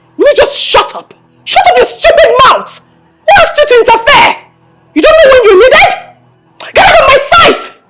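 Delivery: furious yelling. Telling an interfering man to shut up and leave: frustrated angry shouting. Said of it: "Why are you sounding so frustrated?".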